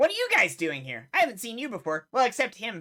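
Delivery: high, swooping tiny dragon voice. Voicing a tiny dragon snapping at a player reaching for its gold: tiny dragon voice. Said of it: "And he points at Yuri".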